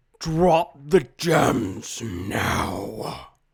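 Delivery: big, rough, deep guttural bellow, very loud. Describing a guy who almost yells at you, big guttural yelling voice. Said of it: "almost like yell at you, and it's just this big guttural voice".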